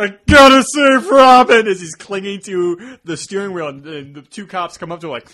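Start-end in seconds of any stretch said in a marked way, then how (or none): 0.0-1.7 put-on very loud, very high drunken slur. Retelling a scene where Batman tries to start the Batmobile, in Batman's put-on drunk slur. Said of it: "he just slurs like".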